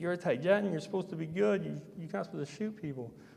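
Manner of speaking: play-acted, high, imploring, begging voice. Retelling what the woman said to you as she begged, imitating her pleading. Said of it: "She was pleading and begging".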